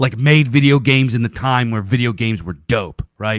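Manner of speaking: ordinary talk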